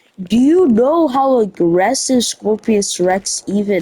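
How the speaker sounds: ordinary talk, nothing marked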